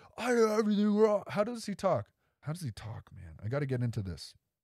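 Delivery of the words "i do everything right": put-on, high, all-out screamed outburst. Retelling what a man yelled, imitating a scream.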